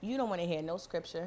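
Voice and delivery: ordinary talk, nothing marked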